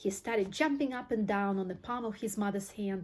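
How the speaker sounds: plain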